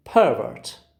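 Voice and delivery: first syllable of pervert stressed. English word stress lesson, the noun pervert, stress on first syllable PER. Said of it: "You can easily see that the first syllable receives a receives a stress. How do I say? I say pervert. It's a noun".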